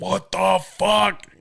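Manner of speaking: angry dad voice, high, loud, slow drawn-out yell.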